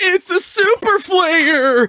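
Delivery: very high, very loud, shrill, booming, slow and drawn out. Explaining a face palm, imitating a voice heard in their head: Michelangelo voice. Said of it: "heard in my head Michelangelo's voice going".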